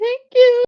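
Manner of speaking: very high-pitched, uncomfortable, awkward voice. Retelling taking the pillow from Jazzy: imitating an awkward thank-you. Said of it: "an awkward".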